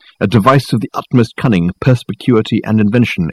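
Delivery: ordinary delivery, nothing marked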